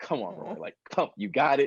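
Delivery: mock nervous, anxious self-encouraging tone. Retelling an anxiety attack during a take: imitating own anxious self pep-talk. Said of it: "literally had almost an anxiety attack".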